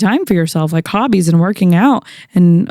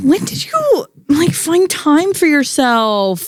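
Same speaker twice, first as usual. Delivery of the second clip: put-on high, swooping toddler whine; 8 semitones higher than usual. Asking the other speaker a question in a put-on whiny voice. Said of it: "ask it in a whiny voice".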